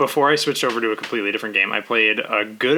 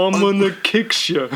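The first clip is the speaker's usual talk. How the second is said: put-on Brooklyn accent, higher; 9 semitones higher than usual. Imitating a dubbed fighter from Brooklyn: 4Kids Sanji Brooklyn voice. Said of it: "in Brooklyn?".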